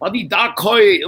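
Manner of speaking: put-on Cantonese spoken with a thick American accent. Retelling a dubbed film line in American-accented Cantonese. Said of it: "Cantonese has kind of a thick American accent".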